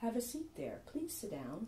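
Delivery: hushed, soft, creepy murmur with swooping pitch. Retelling a voice heard in the bathroom, doing a creepy Hannibal Lecter voice. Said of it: "a really creepy voice".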